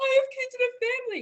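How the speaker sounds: acted-out tearful, high, weepy pleading. Retelling a security guard's plea after a crash: imitating a security guard crying. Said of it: "crying or whatever".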